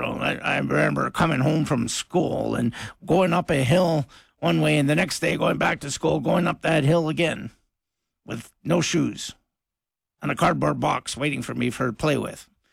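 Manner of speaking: put-on croaky, creaky old-man grumble, rattled off fast. Radio host doing an on-air bit, in an old man voice. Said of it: "here's my old man voice here".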